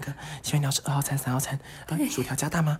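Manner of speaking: quiet, hushed, careful tiptoeing voice. Retelling how the order staff spoke while everyone listened: imitating staff speaking very quietly. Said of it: "他们就很小声的".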